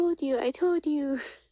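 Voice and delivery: high-pitched infant voice.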